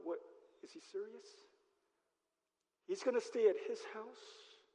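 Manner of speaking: soft muttering among several people. Retelling the Zacchaeus story, imitating the people muttering. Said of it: "the people start muttering".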